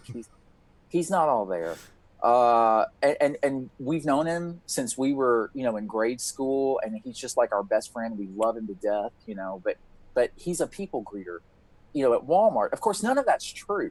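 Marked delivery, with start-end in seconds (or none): 0.1-1.8 lowered voice, speaking quietly, lower pitch. Retelling taking the cop aside to talk about a friend: lowered voice. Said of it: "lower my voice".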